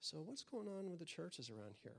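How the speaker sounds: very hushed, soft, discreet voice under the breath. Retelling a question to a next-door neighbor, imitating own hushed tone. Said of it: "in a very hushed tone".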